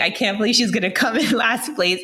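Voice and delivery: acted, amused, giggling disbelief, laughing while talking. Speaker retells her father in the stands at her race, imitating father laughing while talking. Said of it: "my father in the stands laughing".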